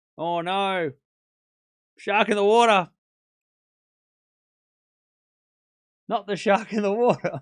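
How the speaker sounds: convincing, believable Australian accent. Speaker repeats a line again before returning to the commentary, believable Australian accent. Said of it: "with a believable Australian accent".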